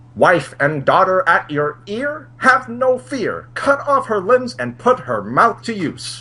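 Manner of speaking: put-on very high, old-timey fifties voice. Reading out the original version, the speaker puts on a fifties voice. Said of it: "fifties voice coming up".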